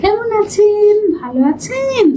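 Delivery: soft, slow speech. Showing how the speaker practiced talking as the voice changed, soft, slow speech. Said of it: "আস্তে আস্তে কথা বলার ... এভাবে করে কথা বলতাম".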